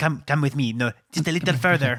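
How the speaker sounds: put-on French waiter voice. Recalling the waiter scene from The Meaning of Life, doing a French waiter impression. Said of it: "He's like".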